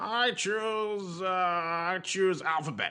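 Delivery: very slow, tinny put-on voice. Doing a Mark impersonation while choosing a category: tinny Mark impression. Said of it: "I'm gonna do my best uh, Mark impersonations. ... did I sound tinny enough".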